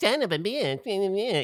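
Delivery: mock performance voice. Retelling how he mocked the actors' lines: mocking the actors' lines. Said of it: "I was mocking all of your lines".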